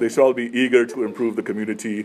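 ordinary talk

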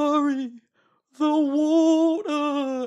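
frantic woman's shriek, very high and loud. Retelling her uncle's campfire story, the speaker voices a woman in it: imitating a woman's voice. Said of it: "doing this woman's voice".

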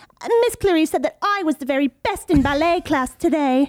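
put-on high-pitched posh little British girl voice. Asked for a character from the uk, the speaker performs a posh little girl voice. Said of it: "I did a posh little girl that was".

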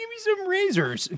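put-on very high little kid, eighth grader voice. Retelling asking dad to get something from the store, in a little eighth grader voice. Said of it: "my little eighth grader voice".

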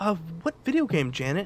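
loud, swooping TV weatherman voice. Acting out a weatherman asking which video game: imitating a weatherman. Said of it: "the weatherman's gonna be like".

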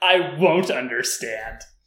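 sulky, cross, petulant, angry delivery. Discussing a character's line with co-hosts: imitating Sasuke's petulant anger. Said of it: "it was like a petulant, angry voice".

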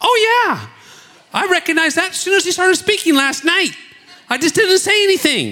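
mock eager, bubbly, very high and swooping delivery. Retelling how a woman next to the speaker agreed: imitating an enthusiastic woman. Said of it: "she puts her hand up like this enthusiastically".

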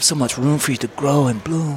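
put-on seductive voice. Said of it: "Picture Jeff talking like that".

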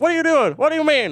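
very high, loud, quick, fun voice, words rattled off. Describing a movie spirit who points a lot, Ghost of Christmas Future fun voice. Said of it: "he's got a fun voice".

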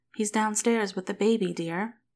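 plain

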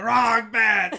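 screaming at full volume. Imagining what he would have screamed about the bet, screamed. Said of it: "if he would have screamed it".

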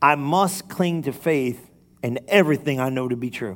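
slow, measured, deliberate word-by-word reading. The speaker reads a passage aloud to listeners, as told: slow reading. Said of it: "Now read that slow".

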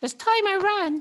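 very high, loud, shrill, squeaky mouse voice. Reading a children's book aloud, speaker voices a mouse in a random mouse voice. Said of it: "That was my random mouse voice".

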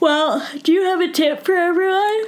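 very high voice, yawned through mid-yawn. Late at night, asking the other speaker a question while yawning. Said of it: "Sorry, I'm yawning".

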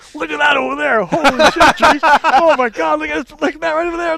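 excited shouting. Speaker retells pointing out sights to someone who cannot turn his head, retelling an excited yell. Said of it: "and I'm yelling".

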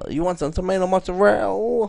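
poorly done Staten Island accent. Mimicking how people talk on Staten Island, bad Staten Island accent. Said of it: "You need to work on your accent".

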